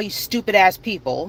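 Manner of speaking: ordinary talk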